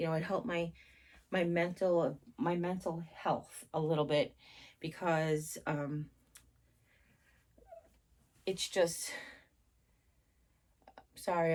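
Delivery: getting emotional mid-sentence, stumbling over words. Speaker recounting the last week of feeling better, having an emotional moment. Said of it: "I just had an emotional moment".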